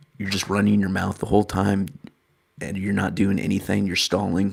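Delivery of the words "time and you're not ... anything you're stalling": normal talking voice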